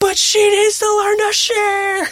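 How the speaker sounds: put-on high, slow know-it-all child voice.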